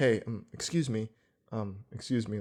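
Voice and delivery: low, halting, hesitant, low-key voice with ums. Speaker retells Doug turning around to speak up, in Doug's soft low voice. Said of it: "low voice, like because Doug is very soft spoken".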